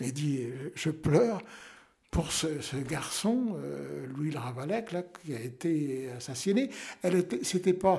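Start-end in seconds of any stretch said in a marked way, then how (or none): none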